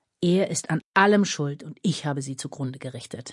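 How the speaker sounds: ordinary delivery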